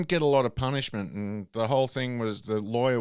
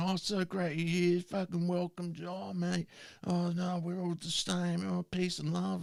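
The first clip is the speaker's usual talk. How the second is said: mock over-friendly drunken babble, pitched up; 6 semitones higher, 7 dB quieter than usual. Retelling what a drunk guy in a club said: imitating a drunk man. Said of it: "he was really drunk".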